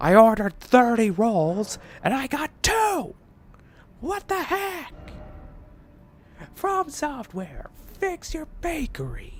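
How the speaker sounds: put-on upset complaining voice. Joking that from software is a bakery; voice a mock-upset complaining customer. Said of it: "upset customers being like".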